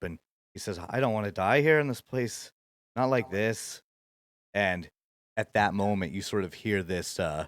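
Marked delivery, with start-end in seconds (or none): 0.8-3.8 tearful, on the verge of tears. Narrator voicing a wounded man looking up at the listeners, tearful. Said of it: "his eyes well up".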